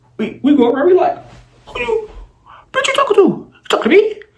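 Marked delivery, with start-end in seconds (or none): 1.7-4.2 furious. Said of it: "We go off on her".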